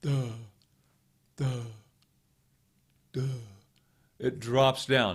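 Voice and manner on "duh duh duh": dopey, stupid-sounding duh, quieter. Guiding listeners through a voice exercise: stupid-sounding duh. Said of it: "a really stupid sounding duh".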